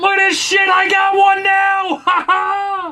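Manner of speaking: high, loud, shouted, gloating monster voice.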